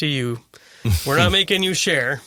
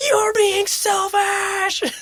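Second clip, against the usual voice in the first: put-on shrieking child voice, pitch way up, accusing. A parent recalls a kid on their daughter's bike yelling at her, retelling a child's scream. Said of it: "my daughter and this other kid screaming at each other".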